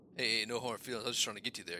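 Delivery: ordinary talk, nothing marked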